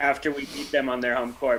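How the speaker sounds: ordinary delivery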